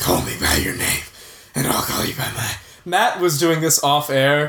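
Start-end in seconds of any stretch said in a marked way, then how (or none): 0.0-2.6 much lower, gruff, growled voice. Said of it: "he's turned Armie Hammer into Batman".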